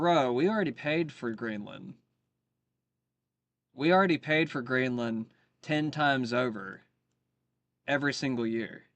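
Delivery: plain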